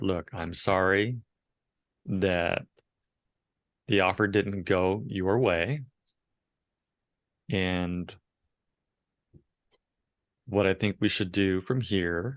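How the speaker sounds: low late-night dj voice. Showing how to talk to a buyer whose offer failed, low late-night DJ voice. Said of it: "you get down into that late night D J voice".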